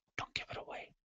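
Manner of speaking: very soft hushed whisper. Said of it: "why are we whispering?".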